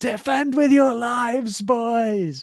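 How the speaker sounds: play-acted very high, very slow booming drawn-out bellow. Retelling a loud fan at a rugby match: imitating a loud shout. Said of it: "unbelievably loudly, he went".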